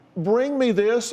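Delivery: put-on child yelling. Retelling what a twelve-year-old child yells: imitating a child yelling. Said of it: "a twelve-year-old child yelling".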